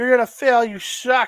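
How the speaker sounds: loud, high-pitched, jeering, taunting yell. Retelling yelling at a wrestler who goes back to the top: retelling a yell. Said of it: "we're yelling at him like".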